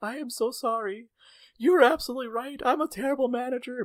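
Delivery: very high, teary, sobbing voice. Retelling a manager's apology in the office: imitating someone crying. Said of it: "crying and she was like".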